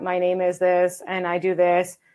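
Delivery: low, flat, dull, lifeless robotic monotone. Showing how some people introduce themselves: flat, dull robot-like voice. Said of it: "flat, like like a robot".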